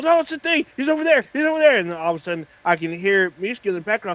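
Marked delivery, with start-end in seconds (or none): 0.0-1.8 very high-pitched, worked-up, excited yelling. Retelling a friend getting excited while playing: imitating someone excitedly yelling. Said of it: "he gets all excited, starts yelling".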